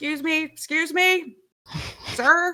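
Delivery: very high-pitched shouting. A character chases a man out the door, shouting after him: shouting after someone. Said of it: "kind of shouting".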